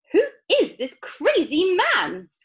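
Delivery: very high-pitched, shrill, shrieking scream. Narrator reading a grandmother reacting to a man greeting the family, screaming. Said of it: "Screamed Grandma Josephine".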